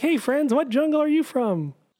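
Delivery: very high, kid-like put-on voice. Describing a grown man playing a kid in a video, imitating a high voice. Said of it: "He's talking with a high voice".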